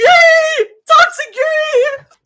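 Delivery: gleeful, high, loud squealing cheer.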